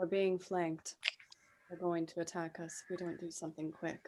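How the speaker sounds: very quiet, soft, barely voiced whisper. A character riding with the party leans to the closest member: whispering. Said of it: "she whispers".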